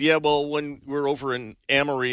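normal talking voice

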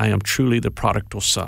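put-on deep voice with English accent. Retelling the first words of a 72-year-old man who wanted a ride, deep English voice. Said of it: "he said in a deep English voice".

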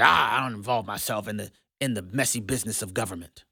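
mock arrogant and condescending. A speaker acting out how some disciple-making advocates talk, mock-arrogant and condescending. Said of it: "would almost arrogantly and condescendingly say".

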